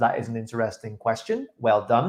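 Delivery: ordinary delivery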